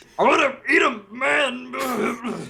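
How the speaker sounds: shrill cartoon voice, very high, slow, drawn out. Repeating a line, praised for doing the voice well: put-on character voice. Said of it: "you do that voice really well".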